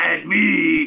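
puffed-up, put-on manly big-man voice. Retelling a wrestler's line: imitating a put-on man voice. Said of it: "he put his man voice on".

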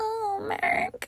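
put-on very high-pitched, soft, tiny baby voice. Trying to imitate how Jessica talks to Mark: Jessica's little baby voice. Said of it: "I was gonna try to do her little baby voice".

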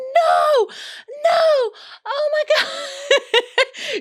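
very high, shrill, long drawn-out scream. Retelling the mom's reaction to a surprise cake, imitating her screaming. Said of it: "she starts screaming like".

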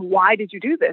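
normal talking voice

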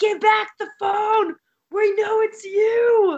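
very high mock screaming shout, drawn-out "you". Chasing a group of guys down the street in costume, retelling their own screaming. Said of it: "we are screaming like".

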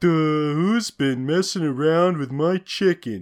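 dim cartoon character voice. Predicting how a cartoon will voice the Beanstalk, in a generic cartoon simpleton voice. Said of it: "that generic cartoon simpleton voice".

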